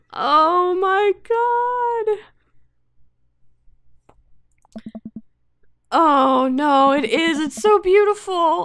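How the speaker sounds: very high, loud, drawn-out, tearful, slightly crying voice. Being shown a strawberry cake made for them, crying a little. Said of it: "I'm crying a little bit".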